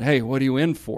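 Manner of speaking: whispered voice. Retelling what a cell neighbor said the first night: imitating someone whispering. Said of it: "he kinda whispered to me".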